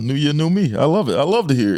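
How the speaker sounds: sarcastic, sing-song fake delight, laid on thick. Joking along with the other speaker: sarcastic mock enthusiasm. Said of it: "in a sarcastic way".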